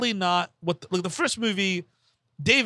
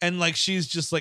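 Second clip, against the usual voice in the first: plain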